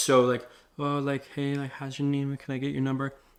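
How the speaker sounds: unsure, hesitant, insecure stumbling full of fillers. Giving advice on approaching a girl, demonstrating an insecure way of talking. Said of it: "You're not going to speak like that".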